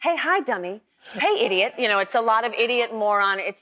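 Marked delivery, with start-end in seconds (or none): 0.0-1.7 casual, teasing, put-down tone. Imitating a friend's teasing greeting, imitating Diane. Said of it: "You sounded like her".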